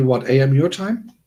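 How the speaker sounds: ordinary delivery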